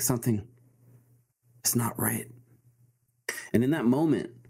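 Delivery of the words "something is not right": quiet muttering under the breath. Narrator voicing a woman who just dropped her teacup: under her breath. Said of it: "under her breath".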